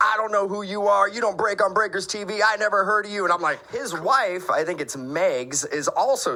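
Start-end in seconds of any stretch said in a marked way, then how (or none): 0.0-3.2 screaming voice, higher pitch. Retelling a confrontation at a party: imitating someone screaming. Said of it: "screaming at me, like".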